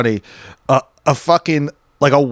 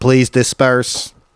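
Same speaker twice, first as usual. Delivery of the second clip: put-on robotic announcement voice. Describing a protest video's loudspeaker order: imitating a robotic announcement. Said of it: "this Big Brother Orwellian robot thing, just repeating".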